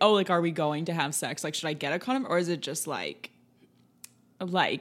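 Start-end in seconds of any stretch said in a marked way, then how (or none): none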